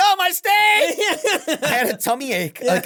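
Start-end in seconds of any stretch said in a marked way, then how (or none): 0.0-1.6 very high, squealing scream. Retelling a night out, imitating own screaming. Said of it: "I kept screaming".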